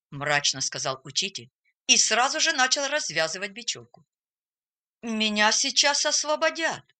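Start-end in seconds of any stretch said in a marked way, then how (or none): 5.0-6.8 shy, hesitant, timid, higher pitch. A pupil tied to a tree during a game answers his teacher, timid. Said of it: "робко продолжил Эрвин".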